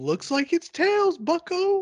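very high-pitched, widely swooping cartoon voice. Imagining Mickey Mouse with a gun in a booth: Mickey Mouse voice. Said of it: "I want Mickey Mouse to come out with a gun. And he says".

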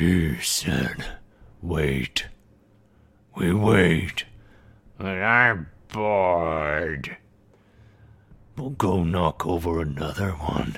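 extremely low-pitched creature voices. Game master voicing an Abyssal conversation heard ahead, in extremely low voices. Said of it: "in these extremely low voices".

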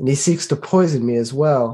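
muttered under breath. Playing a scene at a table, a character remarks on a companion, muttered under breath. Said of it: "kind of like say under my breath".

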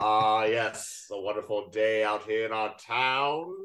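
deep voice with Shakespearean cadence. Describing a man entering a diner in a Netflix scene, deep Shakespearean voice. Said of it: "deep voice, Shakespearean cadence to everything he says".

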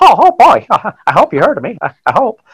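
high cartoon mouse voice. Recalling being asked to audition for a school play, doing a Mickey Mouse voice. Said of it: "I did like a really good imitation of Mickey Mouse".

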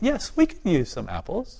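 mock calm, collected, polite, soft, sing-song tone. Retelling answering someone at the door who offered food, retelling a very calm reply. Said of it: "I said very calmly".

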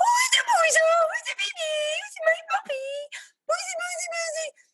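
mock-happy high voice. Showing the voice once used to excite a dog, put-on happy voice for a dog. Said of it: "my happy voice, which I'll do for you now".

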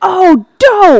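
very high-pitched, very loud, shrill scream. Recounting a surprise appearance he wasn't expecting, retelling a scream. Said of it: "So I screamed".

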